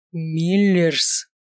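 dragon-like menacing growl. Reading a story, the coach growls a name, with real menace. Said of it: "прорычал тренер с настоящей драконовской угрозой в голосе".

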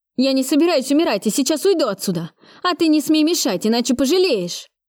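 high, desperate, voice cracking and breaking. Narrator reading a criminal's reply to her question, shouted in a breaking voice. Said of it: "крикнул он срывающимся голосом".

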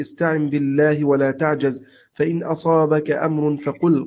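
normal talking voice

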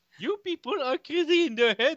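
very high-pitched put-on Indian accent. Repeating another speaker's line while pitching a series, in an Indian accent. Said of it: "mais rajoute un accent indien dedans".

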